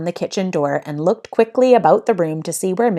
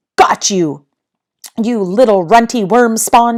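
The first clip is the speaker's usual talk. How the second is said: loud, growled line; 4 semitones higher, 6 dB louder than usual. A narrator reads a woman seizing a small intruder in her kitchen: growling. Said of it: "she growled".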